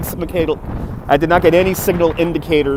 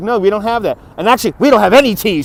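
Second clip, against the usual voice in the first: loud, pitched-up, full-on attitude voice; 5 semitones higher, 5 dB louder than usual. Retelling the lady's answer to a tea order, mimicking her attitude voice. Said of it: "She goes in an attitude voice".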